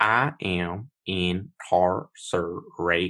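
put-on high-pitched West Virginian accent. Describing an actor's film role, the speaker quotes him in a high-pitched West Virginian accent. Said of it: "a high-pitched West Virginian accent".

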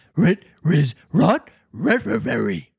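talking dog voice with r-led words. Narrator reading a story, voicing the dog's line: dog voice. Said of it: "said the dog".

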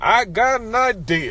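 high, slow, booming orator voice, preacher-like.

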